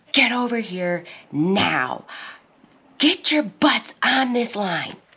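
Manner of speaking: high, screaming coach voice. Retelling how a coach screamed at kids on the field: imitating a coach screaming. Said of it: "he screamed at them".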